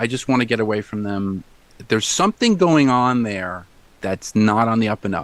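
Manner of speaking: ordinary delivery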